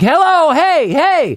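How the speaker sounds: put-on high-pitched, shrill hollering yell. Retelling yelling at a woman in a booth when the gate won't open: retelling a yell. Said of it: "I'm yelling at her".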